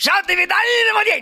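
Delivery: sudden, put-on, very high-pitched shrieking scream. Retelling a sketch, sitting up in bed as Hitler: imitating Hitler screaming. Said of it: "started screaming".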